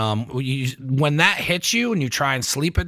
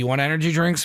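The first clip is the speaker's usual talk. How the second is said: ordinary delivery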